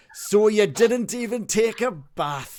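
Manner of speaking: loud, slow, high-pitched booming innkeeper character voice. Voicing the innkeeper scolding a guest who skipped a bath: voicing Toblin the innkeeper. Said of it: "he kind of shakes his head and he says".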